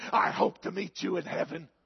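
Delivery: acted venomous, hateful, spiteful tone. Telling of a woman angry at the preacher at the back door, mock-hateful voice. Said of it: "she said in a hateful voice".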